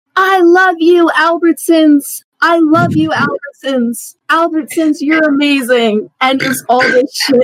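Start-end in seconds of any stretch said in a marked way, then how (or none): 0.2-6.1 play-acted high screaming cry, repeated and called out. Retelling a story from work, imitate a lady coming through the line screaming. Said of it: "comes through the line screaming".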